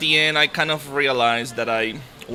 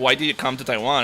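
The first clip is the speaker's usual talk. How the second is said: ordinary delivery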